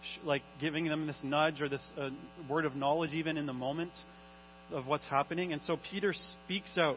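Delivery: ordinary delivery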